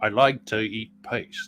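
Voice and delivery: put-on English actor voice, English accent. Showing another speaker an impression, asked for it: Michael Caine impression. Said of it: "here's my impersonation of Michael Caine as a, as a little kid".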